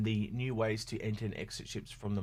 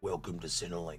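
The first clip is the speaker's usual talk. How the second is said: put-on Australian bogan character accent; 5 semitones lower than usual. Former comedy performer shows the line used to get into character: bogan character voice. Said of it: "a particular bogan I used to do, and I go".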